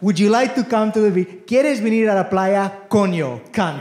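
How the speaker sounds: rising in volume. Retelling the speaker's mother talking to a spanish grandmother, saying it louder and louder. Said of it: "you say it louder and louder and louder".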